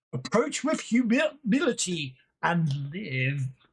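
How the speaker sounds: statue guardian character voice. Game narrator voicing two statues as the players step through the door: loud booming statue voice. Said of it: "a loud voice uh, booms from the two statues".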